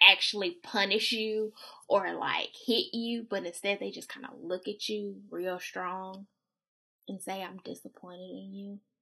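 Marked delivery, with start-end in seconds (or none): 7.4-8.8 put-on hushed, very quiet, calm parental voice. Imitating parents who say they are disappointed: imitating a real calm voice. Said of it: "in that real calm voice".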